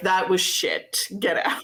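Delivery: dismissive delivery. Pretending to judge a band audition: Simon Cowell voice. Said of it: "I'll be Simon Cowell".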